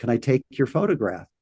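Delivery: imitated very broken English. Retelling what a little old man asked: imitating very broken English. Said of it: "said in very broken English".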